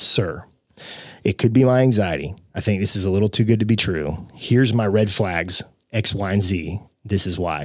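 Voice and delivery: ordinary talk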